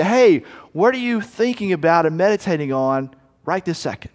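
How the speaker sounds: plain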